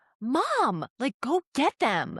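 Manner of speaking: mock very high, insistent, swooping kid's yelling. Retelling how her son yelled at her to fetch his goggles: imitating son yelling. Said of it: "yelling at me".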